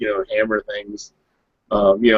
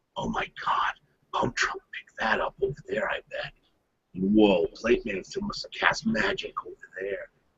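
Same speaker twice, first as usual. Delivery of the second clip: hushed, breathy whisper full of awe and wonder; 10 dB quieter than usual. Looking around the gymnasium in awe, a character speaks in an awed whisper. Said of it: "You hear him like whispering".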